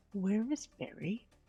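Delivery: very soft, gentle, hushed voice. Announcing her character's line, then saying it very softly. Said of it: "She's going to say very softly".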